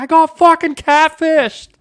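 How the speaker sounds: very high, stretched-out, ecstatic shout of joy. Recalling being recorded on video after catching a catfish, retelling own yell. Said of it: "and I'm just yelling".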